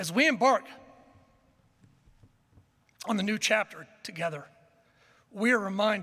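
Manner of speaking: voice audibly choking up with emotion. Welcoming a returning coach back at a press event, getting emotional. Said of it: "sorry, I get emotional".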